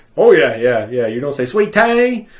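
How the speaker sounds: put-on Southern US accent. Retelling what a server down south said: imitating a server's Southern accent. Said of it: "how he did that rendition of the accent".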